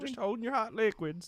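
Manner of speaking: high talking-object voice for a coffee cup. Joining the joke about a coffee cup doing coffee cup stuff: coffee cup voice. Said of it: "now it's our inanimate object noise".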